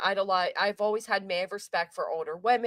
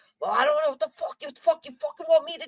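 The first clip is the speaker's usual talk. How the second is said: put-on New Jersey mob accent, higher, louder; 8 semitones higher, 4 dB louder than usual. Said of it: "that's exactly what he sounded like".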